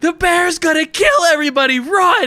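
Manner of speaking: very high, full-volume, top-of-the-lungs scream. Playing a character in a crowd, warning everyone about the bear: yelling as loud as he can. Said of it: "yell as loud as he can".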